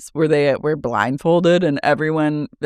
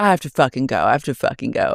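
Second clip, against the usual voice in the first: put-on angry, fed-up, heated outburst. Retelling how Jasmine reacted: imitating Jasmine angrily. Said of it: "Jasmine just gets mad".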